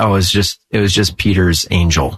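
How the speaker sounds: plain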